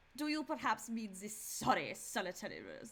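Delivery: swooping German accent drifting into British accent. Trying out a calibration phrase, a failed German accent that sounds British. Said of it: "That's more British".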